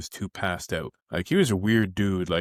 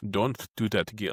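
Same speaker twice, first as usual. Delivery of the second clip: poorly done put-on Ukrainian old man accent. Retelling what the man who came to vacuum the floor said, bad ukrainian accent. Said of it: "not a very u- good Ukrainian accent".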